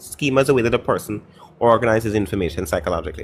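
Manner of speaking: normal talking voice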